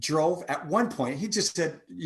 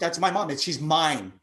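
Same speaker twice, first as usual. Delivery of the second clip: normal talking voice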